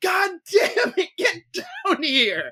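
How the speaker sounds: high, drawn-out, fed-up, exasperated yell. Retelling a husband at the bottom of a bungee jump: imitating someone yelling. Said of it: "just yelling".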